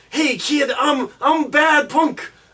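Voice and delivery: high-pitched corny eighties cartoon voice. Describing a character's original voice from an old cartoon, Greco's eighties cartoon voice. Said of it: "it's real eighties animation".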